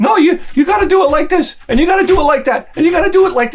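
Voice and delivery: very high-pitched, barked delivery. Retelling the wife giving dance instructions: imitating barked instructions. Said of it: "you're barking in my ear".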